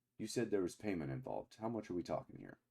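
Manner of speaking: very quiet hushed voice. Game narrator voices a man who makes sure his men can't hear: lowered voice. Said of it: "he like lowers his voice".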